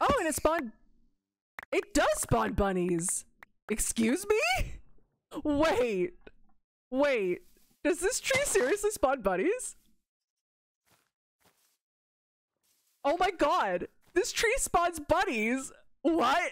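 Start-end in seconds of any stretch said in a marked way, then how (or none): 7.8-16.5 cracking up mid-sentence, high laughing disbelief. Streamer in a game discovering a tree that spawns bunnies, cracking up laughing. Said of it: "I am cracking up".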